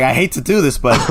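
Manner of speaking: ordinary talk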